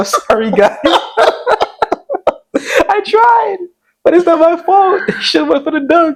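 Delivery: very high, sobbing mock wail. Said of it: "I said".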